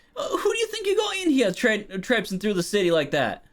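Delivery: very high, swooping, affronted indignant protest. Voicing a beggar who keeps pace with a carriage: indignant beggar. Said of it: "he gets a little indignant".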